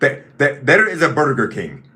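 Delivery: put-on earnest, sincere-sounding Hungarian accent. Retelling a man's answer when asked where to get food, Hungarian accent. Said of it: "with his Hungarian accent".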